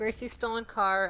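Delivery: plain reading voice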